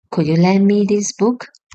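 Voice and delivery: ordinary talk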